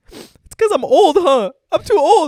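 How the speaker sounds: acted wailing sob, very high and very loud. Retelling a younger brother's reaction about being too old: imitating someone bawling. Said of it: "He was bawling his eyes out".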